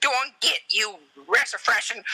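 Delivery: high, swooping, drawn-out cartoon voice. Imitating the brothel madam scolding someone: Yosemite Sam voice. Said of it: "It was like, um, Yosemite Sam".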